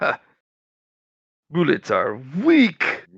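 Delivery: put-on thick Russian accent. Retelling what a bullet-catching guy said: imitating a thick russian accent. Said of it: "He had a thick Russian accent".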